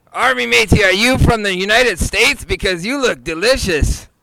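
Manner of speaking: hammy pirate voice, loud and pitched way up. Answering a call for everyone's best pirate impression, in a pirate voice. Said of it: "do your best pirate impression".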